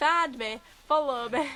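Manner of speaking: loud put-on Yorkshire accent. Joking about how a comedy tent crowd in Cambridgeshire would hear it: Yorkshire accent. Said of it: "Like in a Yorkshire accent".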